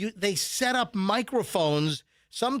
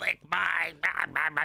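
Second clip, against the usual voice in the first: put-on sinister voice, pitched lower; 3 semitones lower, 3 dB quieter than usual. Retelling what a caller said on air: imitating a sinister put-on voice. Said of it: "trying to do some, like, sinister voice".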